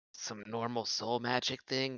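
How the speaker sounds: hushed whispered aside. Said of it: "I'm gonna whisper to Dia".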